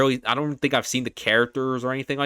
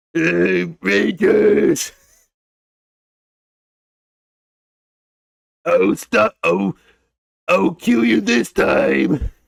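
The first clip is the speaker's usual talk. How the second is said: loud, rough, high, barked goofy villain voice; 7 semitones higher, 6 dB louder than usual. Power Rangers fan shows off doing the show's villains, goofy Goldar villain voice. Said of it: "doing the goofy voices from like the villains of that show, like Goldar".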